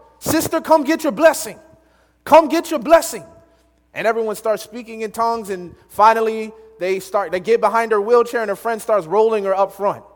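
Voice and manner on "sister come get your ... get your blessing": high, hollering revival preacher yell. Retelling how a preacher kept calling a woman up, imitating a preacher yelling. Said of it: "and he's yelling".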